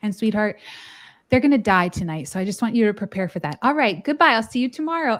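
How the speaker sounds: imitated creepily calm tone. Retelling how a nurse on the first unit handed over reports: imitating a nurse's creepy calm tone. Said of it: "then she'd just very calmly".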